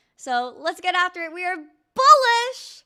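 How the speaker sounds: loud, excited, rising, drawn-out yell. Streamer signing off to viewers for the day, yelling excitedly. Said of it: "Sorry, I'm yelling".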